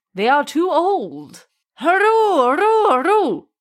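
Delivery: horrible frightening voice. Reading a folktale, Tortoise frightening the king: horrible frightening voice. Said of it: "frightened the king and his people with a horrible voice".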